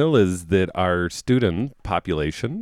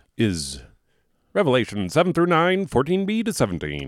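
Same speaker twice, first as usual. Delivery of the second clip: put-on higher-pitched old-fashioned radio announcer voice; 5 semitones higher than usual. Announcing the second reading's scripture citation, in an old-timey radio voice. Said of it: "You're trying to do old-timey radio voice".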